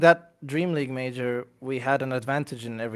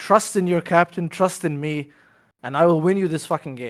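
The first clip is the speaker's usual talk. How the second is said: put-on raised voice; 3 semitones higher, 4 dB louder than usual. Speaker retells the captain pointing at the screen, retelling a raised voice. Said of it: "he raised his voice saying".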